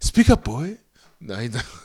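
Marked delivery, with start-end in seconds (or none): 0.0-0.8 very high, very loud shout. Imagining Peter Capaldi's reply to a stammered question: Peter Capaldi impression. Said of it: "he's not gonna say that".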